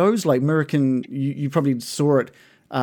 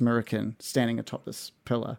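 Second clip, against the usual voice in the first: ordinary talk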